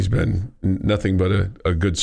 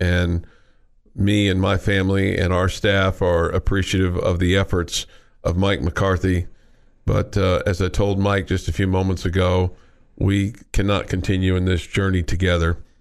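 plain

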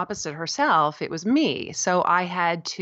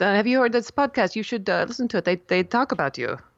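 bad fake French accent, faster; 3 semitones higher than usual. Quoting a man who told the speaker about a podcast, in a terrible French accent. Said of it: "this is my terrible French accent".

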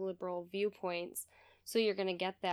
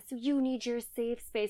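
mock screaming, higher pitched; 4 semitones higher, 3 dB louder than usual. Recalling a man yelling at the class, imitating someone screaming. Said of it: "start screaming in the class".

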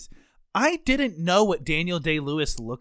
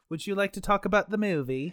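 clearly fake, put-on British accent; 3 semitones higher, 4 dB quieter than usual. Host starting a movie discussion with a co-host, fake British accent. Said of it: "Why are we talking in a British accent".

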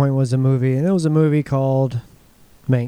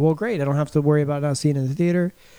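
normal talking voice

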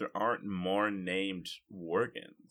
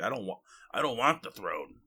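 put-on dwarf voice, slower; 4 dB louder than usual. Discussing a comic character back from the dead, quoting him in a dwarf voice. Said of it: "That was a good dwarf voice".

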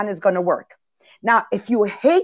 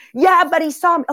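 high, irate, angry yelling; 7 semitones higher, 3 dB louder than usual. Acting out a driver yelling over a lost parking place: imitating someone yelling. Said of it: "why are you yelling?".

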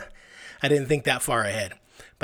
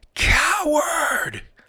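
mock furious outburst, very loud and very high; 5 dB louder than usual. Retelling a coach storming out, imitating an angry coach shouting. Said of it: "frothing at the mouth".

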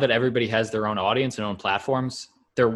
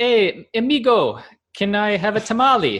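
very high, slow, tourist-style fake Mexican accent; 10 semitones higher, 5 dB louder than usual. Showing another person which imitation is racist, in a fake Mexican accent.

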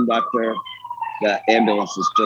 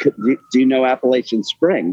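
usual speaking voice

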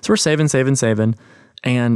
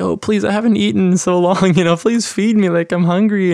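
put-on high-pitched childlike voice, pleading and begging tone; 7 semitones higher, 3 dB louder than usual. Acting out Caleb in public begging a dad for food: imitating Caleb begging for food. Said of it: "acting like it was something".

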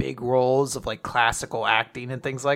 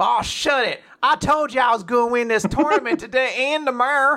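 put-on rural Southern accent, pitched very high; 11 semitones higher, 3 dB louder than usual. Reading lines from the text as a Larry the Cable Guy Southern accent. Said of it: "in a very distinct accent. ... That was just me trying to channel like Larry the Cable Guy".

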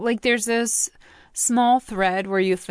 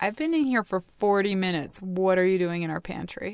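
plain

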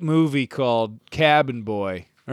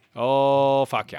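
attempted Maine accent, put-on. Joking with others about Mainers' short speak, trying an attempted Maine accent. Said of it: "I'm trying to talk like a Mainer".

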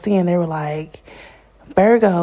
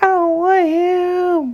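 imitated crying voice, higher; 12 semitones higher than usual. Retelling one night when she cried about two men: imitating her own past crying. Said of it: "I remember crying like".

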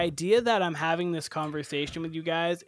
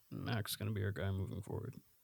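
voice sunk very low and deep; 8 semitones lower, 12 dB quieter than usual. Imitating a football coach backing his quarterback: Bill Belichick impression. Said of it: "that was a good Belichick impression".

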